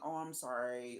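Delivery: mock overdone apologetic tone. Imitating someone who apologizes to seem sincere: imitating an overdone apology. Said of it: "they'll apologize to seem like they're sincere".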